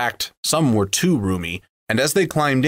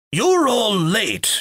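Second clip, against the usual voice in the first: very high-pitched, grumbling, complaining tone; 10 semitones higher than usual. Galleon, shaken awake and laughed at by the others, speaks: grumbling. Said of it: "he grumbled".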